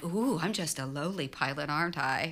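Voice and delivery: acted, drawn-out, good-natured playful teasing tone. Retelling a playful comeback to a teasing colleague: imitating own teasing retort. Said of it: "I'd give him a hard time back".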